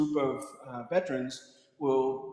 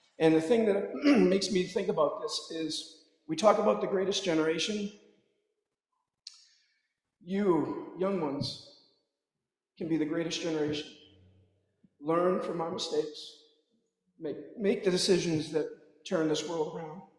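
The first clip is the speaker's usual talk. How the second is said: choked-up voice, emotion catching in the throat; 4 semitones higher than usual. Addressing the young ones at a gathering, choked up. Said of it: "don't mean to get choked up".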